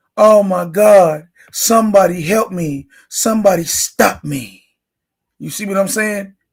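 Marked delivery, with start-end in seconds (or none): 0.2-4.6 put-on whiny crying, louder. Mocking a player who cried to the commissioner: mocking whiny crying.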